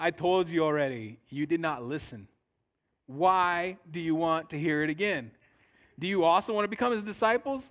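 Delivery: mock biting, needling sarcastic tone. Retelling the healed man's answer to the questioners: acting out sarcastic reply. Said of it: "You guys see the sarcasm there?".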